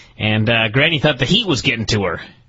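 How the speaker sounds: ordinary delivery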